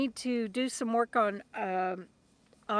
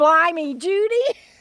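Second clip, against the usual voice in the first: very loud, high Texas Southern drawl; 6 semitones higher, 8 dB louder than usual. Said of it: "that's "blimey" with a te-, uh, Texas Southern accent".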